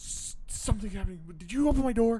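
high, loud, freaked-out, panicky blurt.

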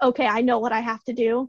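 usual speaking voice

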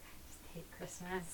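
quiet, bitter tone.

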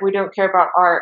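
plain

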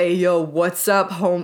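slow, drawn-out character voice. Retelling how they greet guys when acting like Jesse Pinkman: sounding like Jesse Pinkman. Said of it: "I sound like Jesse Pinkett".

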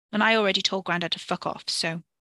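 ordinary delivery

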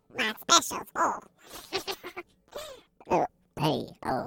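very high, croaking voice with a catch in the throat. Voicing the bartender answering a customer's question, with a frog in the throat. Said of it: "I had a frog in my throat".

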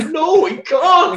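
very high, near-tears, tearful voice. Retelling own reaction to a heartbreaking episode: imitating own tearful protest. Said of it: "with me fucking bottom lip quivering".

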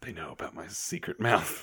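soft aside, muttered under the breath. Voicing a character who makes a quick remark to the side: muttered aside. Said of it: "He just sort of does an aside".

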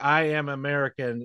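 ordinary talk, nothing marked

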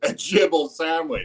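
high voice with chuckle dropped in mid-phrase. Imitating how the game character delivers the line: imitating a line with a laugh in it. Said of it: "he puts a laugh in the middle".

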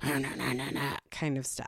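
put-on grouchy angry whisper. Parent retelling how her daughter scolded her in the lobby, mock-grouchy angry whisper. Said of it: "grouchily yelling at me in a whisper".

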